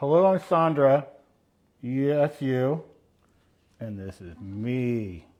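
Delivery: speaking around a cap held in mouth. Introducing yourself on a live video, talking with a cap in mouth. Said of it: "I can't understand what you're saying with that cap in your mouth".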